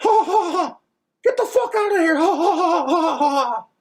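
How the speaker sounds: squeezed way up, cartoonish high voice. Showing off a Mickey Mouse voice: Mickey Mouse voice. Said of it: "I can do a pretty good Mickey Mouse".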